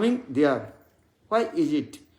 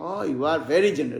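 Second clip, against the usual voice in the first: sarcastic tone, mock praise. Showing how sarcastic words sound through the tune: sarcastic tone. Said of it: "depend on the tune".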